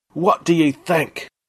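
shrill, very high-pitched roaring bellow. A narrator reads a ruler addressing his army from his palace, roaring. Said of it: "roared Daku Waka at his army".

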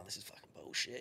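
acted, hushed whisper through sobs. Retelling what you said to the missus back then, retelling your own sobbing. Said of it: "I'm sobbing to the missus going".

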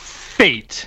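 the word fate stressed hard and whispered. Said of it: "hitting that word fate so hard".

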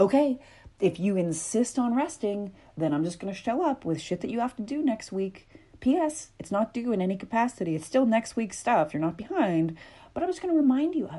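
patronising, talking-down tone. Acting out an inner voice listing next week's tasks: imitating a condescending voice.

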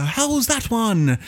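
put-on very high, slow, drawn-out English accent. Retelling a cricket video game's voice lines: imitating a game's English voice. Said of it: "generic voices for each group".

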